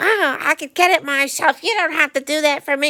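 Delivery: mock cranky yell, high pitched, brushing off. Retelling how a woman in a cast answered a held door: imitating June yelling. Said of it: "yelled at me".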